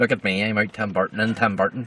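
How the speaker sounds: put-on Northern Irish accent. Repeating the imagined line to an ex-wife, in a Northern Irish accent. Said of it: "In a Northern Irish accent".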